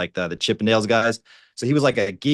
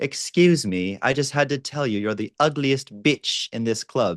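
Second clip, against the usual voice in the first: put-on British accent with Iranian traits; 3 semitones higher than usual. Retelling a guy's club opener to girls: funny Iranian-British accent. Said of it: "this funny, like Iranian, but also British accent".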